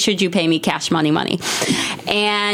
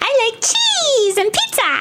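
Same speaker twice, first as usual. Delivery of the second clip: very high, squeaky, thrilled mouse voice. Asked about a voice from their reel, the performer does an excited mouse voice. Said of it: "a voice that sounds like a mouse that was really excited about pizza".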